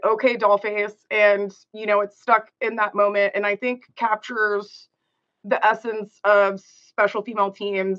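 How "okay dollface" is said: normal talking voice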